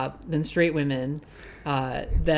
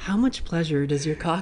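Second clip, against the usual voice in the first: put-on ASMR-style whisper. Joking about asking a podcast question, put-on ASMR voice. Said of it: "get my, like, A S M R voice on".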